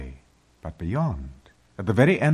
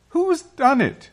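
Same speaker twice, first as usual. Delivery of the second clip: very high, loud, cried-out exclamation; 6 dB louder than usual. Susan, finding Aslan's body gone from the table, cries out. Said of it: "cried Susan".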